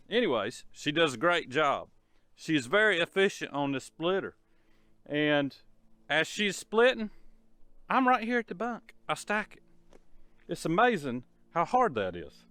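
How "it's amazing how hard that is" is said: sarcastic, put-on amazement, swooping sing-song. Talking about stacking wood at the bunk: sarcastic. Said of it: "I'm being sarcastic".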